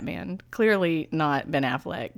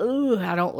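put-on creepy child voice, pitched higher; 4 semitones higher than usual. Imitating the creepy kid role: imitating creepy Ezra Miller role. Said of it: "He's super duper creepy, and he's like".

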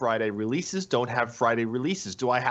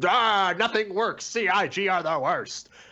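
fed-up, angry ranting outburst; 6 semitones higher than usual. Mocking angry forum posts about a broken release: imitating an angry backer. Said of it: "your angry backer impression again".

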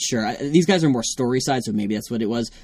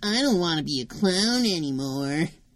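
put-on rebellious teen voice, higher and quieter; 5 semitones higher, 4 dB quieter than usual. Redoing the Dumbo voice as a rebellious teen. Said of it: "a rebellious teen".

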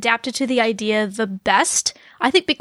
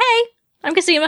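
nonchalant, offhand delivery with raised pitch; 7 semitones higher, 3 dB louder than usual. Retelling a clone's casual introduction: imitating Cosima's nonchalant greeting. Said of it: "I like that she's so nonchalant about it".

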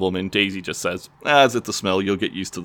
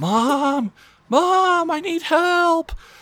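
put-on child's yell, pitched much higher. Retelling how little niece Maddie yelled for her mom, imitating Maddie yelling. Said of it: "Maddie just starts yelling like".

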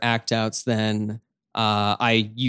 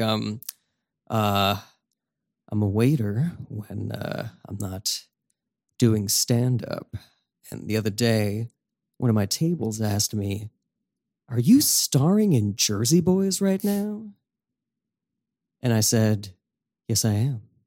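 slow, drawn-out, menacing, sinister delivery. Asked to make your old voice again, perform a less popular joke in a sinister voice. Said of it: "Can you make that voice now?".

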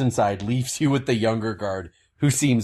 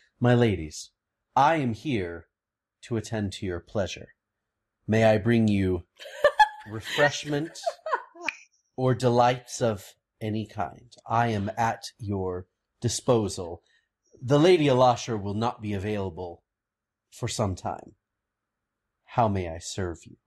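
warm, deferential, very gracious courteous tone. A storyteller voicing a character who greets the two of you, very gracious. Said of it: "looks at the two of you very graciously and says".

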